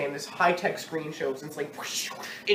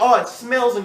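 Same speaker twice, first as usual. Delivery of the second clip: put-on terrible, very loud New York accent; 5 semitones higher, 9 dB louder than usual. Recapping a scene where a character busts the door down, bad new york accent. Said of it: "this is where the New York accent comes back".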